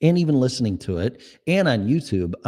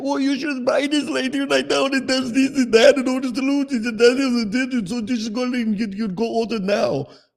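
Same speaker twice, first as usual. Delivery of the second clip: put-on thick Indian accent, much higher; 14 semitones higher than usual. Retelling a man on the line urging a purchase: thick Indian accent. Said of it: "he has such a thick foreign accent".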